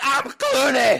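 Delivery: shrill, very high screamed bad put-on Portuguese accent. Complaining about an audiobook's cast narration, mimicking a reader's screamed fake Portuguese accent. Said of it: "screamed every line in what was definitely not a Portuguese accent".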